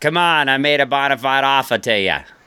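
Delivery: put-on Boston used-car salesman. Retelling what a general manager said, with a Boston accent. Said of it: "I tried to make it Boston there".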